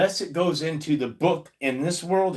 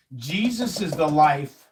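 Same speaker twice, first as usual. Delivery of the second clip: ordinary talk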